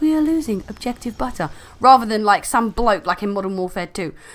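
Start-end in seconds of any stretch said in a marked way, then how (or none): 0.0-1.5 gentle, calming woman's voice. Saying which in-game voice they would prefer, calm, soothing woman's voice. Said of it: "I'd rather have a calm, soothing woman's voice being like".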